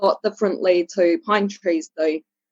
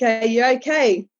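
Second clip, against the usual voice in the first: light, mild calling-out voice; 3 semitones higher than usual. Retelling calling back up the hill: retelling own yell. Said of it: "So I yelled back".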